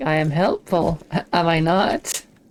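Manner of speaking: very drawn-out, slow, menacing, threatening tone. Imitating a game character's repeated line: imitating a threatening tone. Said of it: "In a kind of threatening tone".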